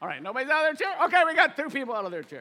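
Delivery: too excited, fast and loud. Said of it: "am I too excited for you?".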